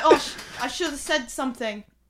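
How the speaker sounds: ordinary talk, nothing marked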